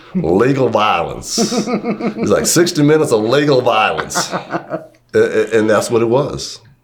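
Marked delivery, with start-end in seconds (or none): 0.2-1.4 put-on country accent. Quoting a guy's old saying about the game, country accent. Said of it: "and I'll do his country accent".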